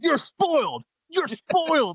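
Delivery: shrill yelling, pitched way up. Imagining a fan yelling at the speaker: imitating someone yelling. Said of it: "start yelling at me and be like".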